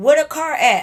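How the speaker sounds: hollering in a high, loud yell. Retelling friends yelling out the car window after the car got towed, retelling a yell out the window. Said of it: "now Kim and them yelling out the window".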